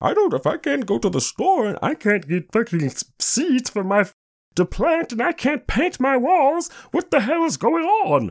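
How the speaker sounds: mocking voice, pitched way up. Mocking people he refuses to name: mocking voice. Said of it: "as I was saying in my mocking voice".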